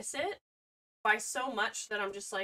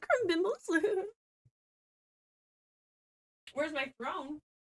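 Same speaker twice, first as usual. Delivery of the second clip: tiny, high little gnome voice; 7 semitones higher than usual. While screwing in drawers, playing a little gnome: little gnome voice. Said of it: "I'll just sound like a little gnome".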